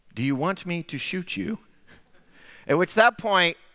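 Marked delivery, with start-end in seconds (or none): 0.2-1.6 utterly calm, soft, matter-of-fact delivery. Retelling what a man with a gun asked the second time: imitating a very calm voice. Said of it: "And then very calmly".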